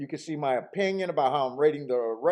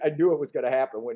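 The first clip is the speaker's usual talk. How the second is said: usual speaking voice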